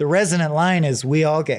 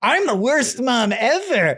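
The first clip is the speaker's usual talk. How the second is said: mock high, drawn-out, over-the-top drunken taunting; 7 semitones higher than usual. Retelling how a mother character taunts her son: imitating an over-the-top drunk. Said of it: "acting like an over-the-top, drunken hula".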